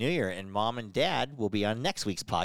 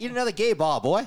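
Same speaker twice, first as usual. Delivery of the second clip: loud, high, mixed Australian and cowboy accent; 8 semitones higher, 5 dB louder than usual. Repeating another podcast speaker's line in mixed-up put-on accents. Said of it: "now you're mixing accents".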